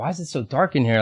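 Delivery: ordinary delivery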